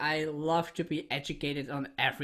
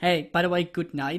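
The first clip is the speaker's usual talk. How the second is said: put-on pointed, passive-aggressive manner. Retelling own usual goodbye in conversations: imitating own passive-aggressive goodbye. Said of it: "normally I'm very passive aggressive".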